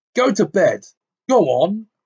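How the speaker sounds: angry snarl. Reading aloud a novel, an uncle's order to the boy at the table: snarling. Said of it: "he snarled at Harry".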